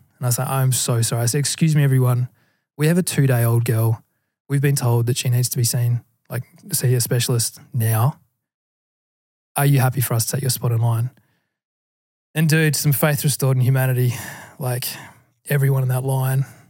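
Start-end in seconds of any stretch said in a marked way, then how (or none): none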